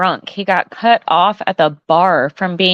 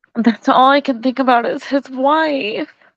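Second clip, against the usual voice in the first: tearful, pitched-up voice close to crying; 7 semitones higher than usual. Told by a companion not to start crying, still speaking: on the verge of crying. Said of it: "don't start crying".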